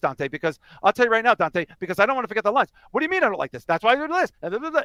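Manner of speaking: rushed, high-pitched, rattled off at speed. Imitating actors rushing their lines so they won't forget them: imitating Clerks actors rushing lines. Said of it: "everything is done really like this".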